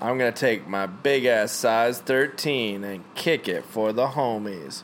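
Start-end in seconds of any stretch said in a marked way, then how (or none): none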